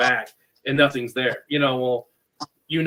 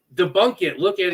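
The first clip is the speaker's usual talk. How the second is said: high, mock screaming voice; 5 semitones higher than usual. Recounting screaming at people at an event, re-enacting the scream. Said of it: "I'm like screaming at these people".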